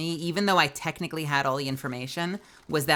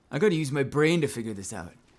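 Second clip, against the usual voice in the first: cheesy TV commercial announcer-style delivery. Quoting a line the way a remembered commercial said it: imitating a commercial's voice. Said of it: "I do that voice every time I say that because of that stupid commercial".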